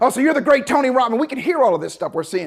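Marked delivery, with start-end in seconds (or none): 0.0-1.2 raised, high-pitched drill sergeant yelling. Retelling a drill sergeant yelling at a late arrival: imitating someone yelling. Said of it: "he's yelling at Tony".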